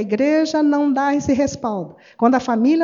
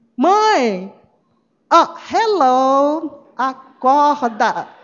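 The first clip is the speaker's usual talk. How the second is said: put-on very slow sarcastic teen drawl, Mãe stretched. Explaining a bible verse as a teen's irony toward his mother, acting it out: mock-sarcastic teenager to mom. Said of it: "é uma ironia do adolescente em cima da mãe".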